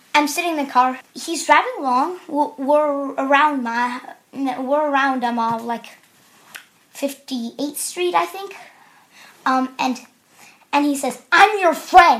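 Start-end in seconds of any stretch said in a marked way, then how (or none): 11.3-12.2 play-acted stern, dead-serious, loud voice. Speaker in a car retelling what the driver said to him, retelling a stern line. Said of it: "he says it really sternly".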